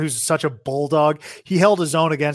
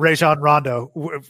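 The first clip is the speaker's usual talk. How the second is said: ordinary talk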